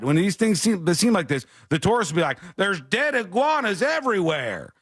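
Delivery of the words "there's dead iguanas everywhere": put-on Southern drawl, high and drawn-out. Acting out how confused tourists talk, in a put-on Southern accent. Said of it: "I don't know why the tourists are southern".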